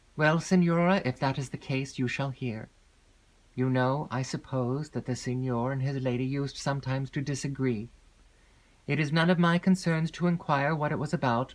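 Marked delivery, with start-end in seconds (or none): none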